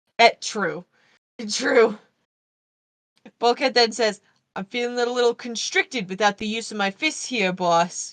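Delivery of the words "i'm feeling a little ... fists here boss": put-on heavy, overdone Boston accent, laid on thick. Recapping a scene, quoting Bulkhead's line in an exaggerated Boston accent. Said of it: "I know I put more Boston on that than was actually there".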